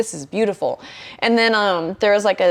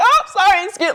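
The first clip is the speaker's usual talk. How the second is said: put-on yelling, higher; 12 semitones higher than usual. Retelling running through a forest past people: imitating own past yelling.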